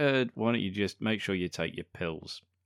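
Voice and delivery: ordinary talk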